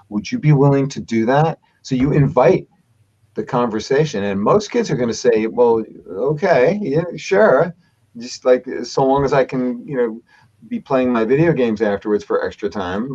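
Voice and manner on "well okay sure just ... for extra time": plain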